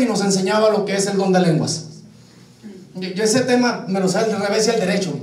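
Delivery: quick, hurried, rushed delivery.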